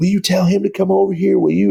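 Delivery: loud high yell. During a media timeout, the speaker hears Jalen calling over: retelling Jalen yelling. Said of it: "I hear Jalen just yelling".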